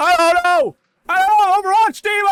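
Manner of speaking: loud, shrill, very high-pitched yelling. Imitating the other speaker's shouting friend: imitating a friend shouting. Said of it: "Your friend's just like".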